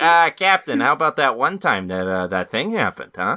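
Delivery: loud, high, dim-sounding cartoon-sitcom voice. Playing a dumb Spock in a joke scene: Peter Griffin voice. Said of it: "he even talks like Peter Griffin".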